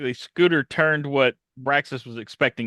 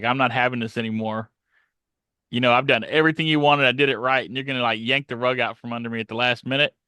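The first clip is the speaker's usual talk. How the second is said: normal talking voice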